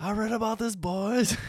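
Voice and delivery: put-on very high, drawn-out, slow holler. Speaker recalls a man yelling out to the group: retelling a shouted line. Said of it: "Bronson just yells out".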